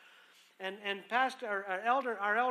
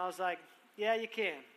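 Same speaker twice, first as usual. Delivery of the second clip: ordinary talk, nothing marked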